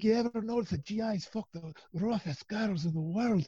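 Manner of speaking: clumsy fake Scottish accent. Retelling Ross Gardner's bit about GIs, in a bad Scottish accent. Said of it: "my bad Scottish accent".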